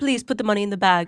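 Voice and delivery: put-on English accent. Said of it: "You could rob a bank with that accent".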